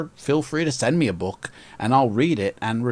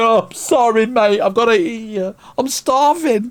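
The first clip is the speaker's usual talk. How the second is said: put-on mock sobbing werewolf voice, higher and louder; 11 semitones higher, 7 dB louder than usual. Voicing a werewolf in a book illustration: put-on crying werewolf voice. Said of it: "The werewolf's crying".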